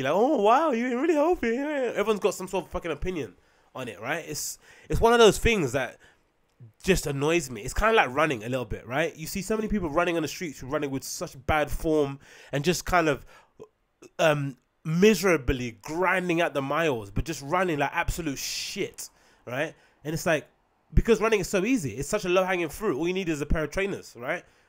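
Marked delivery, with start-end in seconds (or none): 0.1-1.5 high, loud, giddy gushing. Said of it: "They just get all flipping giddy".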